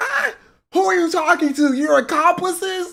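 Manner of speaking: sobbing words in a very high-pitched voice. Retelling what the beaten intruder said on the ground: imitating a man crying. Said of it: "He's on the ground crying".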